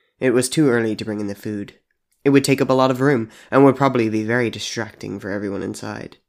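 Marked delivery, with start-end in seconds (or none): none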